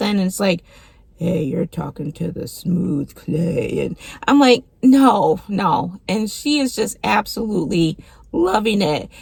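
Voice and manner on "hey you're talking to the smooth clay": creaky put-on radio DJ announcer voice. Retelling a guy talking to a woman, speaker mimics his put-on radio host voice. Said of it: "he puts on like his radio host voice".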